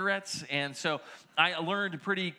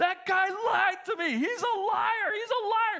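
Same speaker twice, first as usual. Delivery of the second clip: amped-up, very high, drawn-out screaming; 4 dB louder than usual. Retelling how a man came out after a survey, imitating his screaming. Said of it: "he was screaming".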